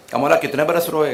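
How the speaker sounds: plain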